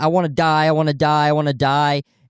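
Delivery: desperate wailing cry, held back, put-on scream. Retelling how a man being taken out by police was screaming: imitating a scream.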